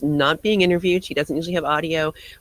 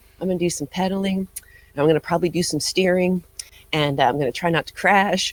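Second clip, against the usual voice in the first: bone-dry, expressionless, dead-level deadpan; 2 semitones higher than usual. Retelling how Aaron answered the speaker's commentary question, imitating Aaron's deadpan. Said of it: "he would be so deadpan".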